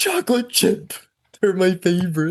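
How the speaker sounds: acted thrilled, delighted, excited exclamation. Imitating the movie's Santa seeing the cookies: imitating excited Santa. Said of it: "He gets all excited".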